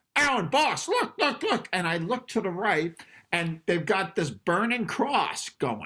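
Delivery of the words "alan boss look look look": put-on, very high-pitched, loud yelling. Retelling someone calling the boss over at rehearsal: imitating someone yelling. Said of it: "somebody yells".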